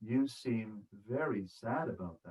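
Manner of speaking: low, very quiet, slow and deliberate voice. Demonstrating how to reflect a listener's feeling back, in a low, slow tone. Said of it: "in a low, slow tone".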